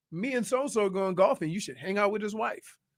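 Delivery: ordinary delivery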